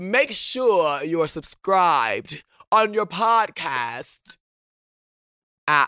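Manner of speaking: put-on British accent. Podcast host retrying a tongue-twister sign-off, in a put-on British accent. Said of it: "if I said it in like a British accent".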